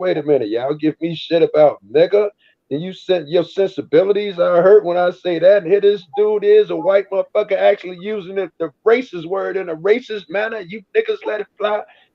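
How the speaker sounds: mock heated, furious, high-pitched angry shouting. Re-enacting what the speaker yelled at them at five in the morning: retelling angry yelling. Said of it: "And I was yelling. I was angry".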